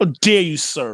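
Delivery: sarcastic mock outrage. Reacting to another speaker's quip, being sarcastic: sarcastic mock outrage. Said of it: "I'm being sarcastic".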